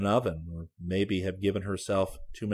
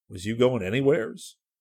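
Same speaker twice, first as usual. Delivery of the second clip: uneasy, anxious, fretful tone; 3 semitones higher, 4 dB louder than usual. A patrolman, coming closer to a man he is questioning, speaks in an anxious voice. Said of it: "said in an anxious voice".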